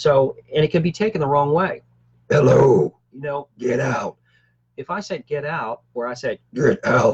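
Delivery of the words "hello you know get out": deep, low, growling voice. Showing listeners how a voice can be taken the wrong way, in a deeper voice. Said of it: "I'm going to do a deeper voice".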